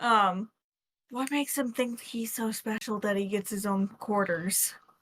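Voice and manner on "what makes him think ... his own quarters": theatrical stage whisper. Whispering into a companion's ear, in character: stage whisper. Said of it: "stage whispering".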